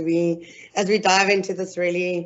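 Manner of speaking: plain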